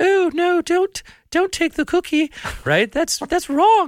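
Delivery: very high, angelic-sounding voice. The angel on one shoulder answers the devil on the other, in an angel voice like Roma Downey. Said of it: "the angel that sounds like Roma Downey".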